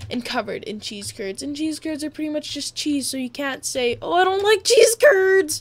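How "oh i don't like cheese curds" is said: very loud, shrill, weird mocking put-on voice. Explaining poutine, the speaker mocks a hypothetical person: weird mocking voice. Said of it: "that was a weird voice".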